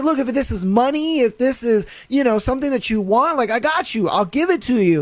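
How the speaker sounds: mock urgent, placating pleading voice. Retelling how the dad begs the intruders: imitating someone pleading. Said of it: "I understand you're pleading and all".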